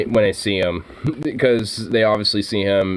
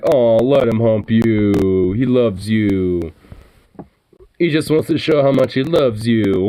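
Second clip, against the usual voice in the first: sarcastic, fake-sweet delivery; 2 semitones higher, 4 dB louder than usual. Retelling what the speaker says to friends when Zukov starts, mock sarcastic tone. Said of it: "I just kind of do a sarcastically like".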